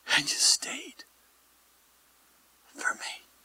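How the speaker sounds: soft, hushed, whispered awe.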